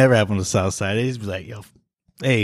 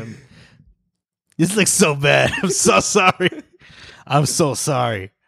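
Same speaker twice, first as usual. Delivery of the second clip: slow words broken up by uncontrollable laughter; 3 semitones higher than usual. Apologizing for breaking up on the recording, laughing uncontrollably while talking. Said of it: "I just can't keep it together".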